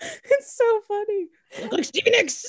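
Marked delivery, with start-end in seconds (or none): 1.6-2.4 growled, pitched way up, very high. Retelling a scene where Amanda growls at the guards: imitating Amanda growling. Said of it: "the way that she growls it".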